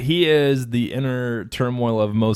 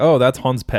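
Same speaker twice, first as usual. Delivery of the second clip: ordinary delivery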